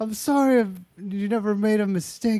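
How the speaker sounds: high voice on the edge of tears. Retelling a movie scene, quoting a character: imitating someone about to cry. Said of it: "he's about to cry".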